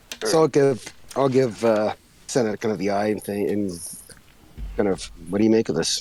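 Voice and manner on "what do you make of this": muttered under the breath. Asking a companion in character what they make of this: muttered under the breath. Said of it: "Kind of under, under my breath".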